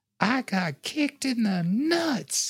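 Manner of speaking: put-on very high, loud, sweetly innocent eight-year-old voice. Retelling what a young son said to an older lady: imitating son's innocent loud kid voice. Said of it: "in his most innocent and loud eight-year-old voice".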